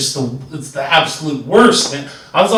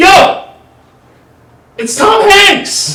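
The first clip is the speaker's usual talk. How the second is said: snapping, high, loud, exasperated yell. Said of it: "And I finally yell".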